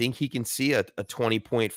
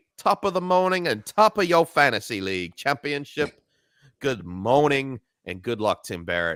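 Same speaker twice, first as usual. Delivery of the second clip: clumsy, bad put-on Cockney accent; 3 semitones higher than usual. The speaker greets someone by name on the show, bad Cockney accent. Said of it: "bad Cockney accent".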